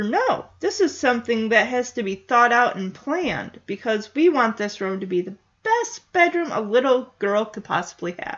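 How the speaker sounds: ordinary talk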